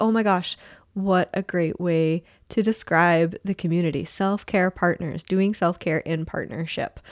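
ordinary talk

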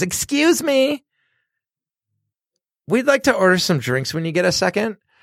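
very high-pitched, polite voice. Retelling a drunk customer at a packed bar: imitating a high-pitched voice. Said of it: "To say "excuse me" in a high-pitched voice".

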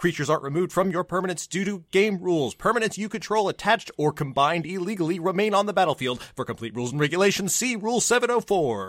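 whole line in a single breath. Reading the card's reminder text aloud while being timed: all in one breath. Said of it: "One breath".

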